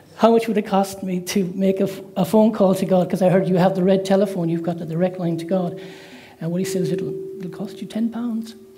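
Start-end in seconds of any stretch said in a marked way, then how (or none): 6.9-8.5 soft attempted English accent. Telling an old joke, quoting a man's reply: english accent. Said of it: "my best English accent".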